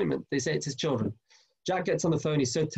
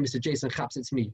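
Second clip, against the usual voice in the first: ordinary talk, nothing marked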